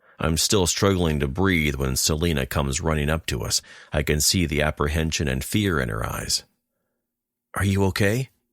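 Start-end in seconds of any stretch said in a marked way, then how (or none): 7.5-8.3 shy, timid little voice, high pitch. Reading a story aloud, a girl running up to an injured man: timid voice. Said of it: "her timid voice asks".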